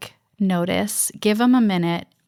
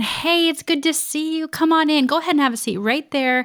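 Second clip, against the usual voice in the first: quick, pitched-up, upbeat, outgoing, friendly voice; 8 semitones higher than usual. Showing how to greet someone with loud energy, friendly and outgoing. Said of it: "I can be friendly and outgoing".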